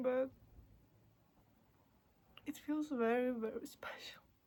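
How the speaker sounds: crying while talking, tearful voice. Speaking for the first time after three days silent: crying while talking. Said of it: "why I'm crying".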